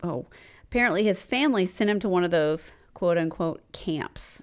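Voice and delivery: normal talking voice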